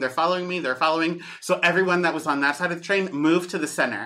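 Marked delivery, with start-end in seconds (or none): none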